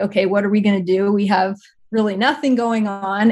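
ordinary delivery

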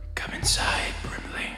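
very soft, hushed whisper. Voicing a figure speaking inside a character's head: whispering a character's line. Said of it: "in a whisper".

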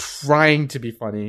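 slow delivery with "trying" stressed hard.

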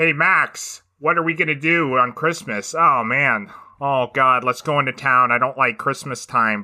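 put-on laid-on American accent, pitched high. Discussing a film voice role, speaker imitates Benedict Cumberbatch's American accent. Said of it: "he's doing like a, an American accent. So he sounds like".

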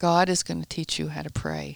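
ordinary talk

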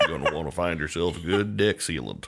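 deep voice, dropped down low. Repeating the deck sealant advice as Sam Elliott: Sam Elliott voice. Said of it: "I pictured Sam Elliott".

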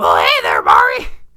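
very loud, belted-out cartoon-style voice. Saying a line in a Marge Simpson voice as Luigi.

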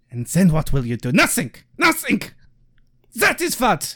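fake, swooping, put-on German accent. Trying a threatening rant again, this time in a put-on German accent. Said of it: "let me try that again in a German accent".

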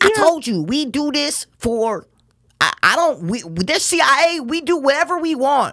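squeaky, very high-pitched character voice. Asked for an impersonation of the woman with short hair: impression of the short-haired woman. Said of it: "Can you do an impersonation of the chick with the short hair?".

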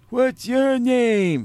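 terrible squeal, very high and very loud. Telling a story, the speaker imitates the guy sitting next to him. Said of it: "this is a terrible impression".

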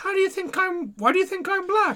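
mock young woman voice.

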